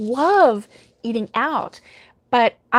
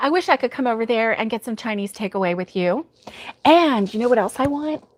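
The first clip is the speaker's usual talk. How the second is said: plain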